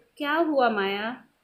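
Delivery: ordinary delivery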